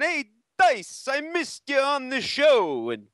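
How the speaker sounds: high, drawn-out, comic put-on voice, pitched way up. Retelling talking in a truck while on hold: Andrew Dice Clay voice. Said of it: "talking like Dice".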